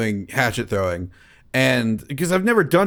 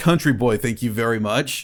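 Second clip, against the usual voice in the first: usual speaking voice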